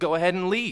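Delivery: shouting in anger. Recalling the day of getting so angry at her: angry shout. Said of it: "I just shouted at her and said".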